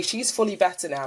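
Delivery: ordinary talk, nothing marked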